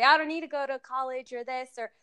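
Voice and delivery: normal talking voice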